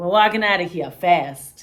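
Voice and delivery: put-on booming, loud East Coast American accent. Retelling a movie scene, imitating Daniel Day-Lewis's East Coast accent. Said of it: "Daniel Day-Lewis's accent is so, like, East Coast".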